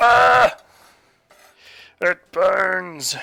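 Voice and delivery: loud, high-pitched pained yelp.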